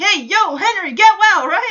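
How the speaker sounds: play-acted, friendly, high shout. Recounting a phone call, quoting someone who shouts into the phone. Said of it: "Mike shouts to the".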